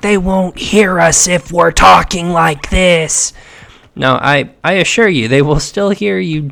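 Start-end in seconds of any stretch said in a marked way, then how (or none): 0.0-3.3 mock loud whisper, whisper-yelling. Mocking game characters who talk quietly near enemies: imitating whisper yelling. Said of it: "they're whisper yelling".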